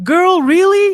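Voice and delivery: shrill, very high, very loud squealing voice. Reading out a viewer comment, imitating Gina's voice. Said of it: "I'm trying to do Gina voice".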